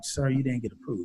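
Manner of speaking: discreet half-whisper, breath only, soft and hushed. Retelling being told a card application was not approved: imitating someone half-whispering.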